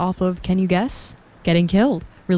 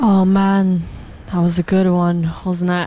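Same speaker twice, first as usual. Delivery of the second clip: put-on British accent. Host chatting with listeners between songs, in a put-on British accent. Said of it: "I just really want to keep doing this British accent".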